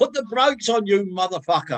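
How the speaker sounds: mock shrill shout at the top of her voice. Retelling a woman grabbing their arm as the plane lands, imitating someone shouting. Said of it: "shouting at the top of her voice".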